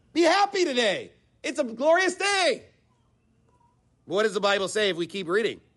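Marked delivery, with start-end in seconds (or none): 0.2-2.7 high, mock-cheerful, wink-wink sarcastic tone. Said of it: "wink, wink, nod, nod".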